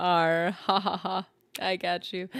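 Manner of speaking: acted smug, gloating laughing voice. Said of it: "And I was like".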